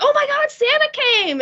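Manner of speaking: play-acted thrilled voice, very high-pitched and excited. Recalling Christmas Eve when the parents came upstairs, imitating excited parents. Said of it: "And then like so excited".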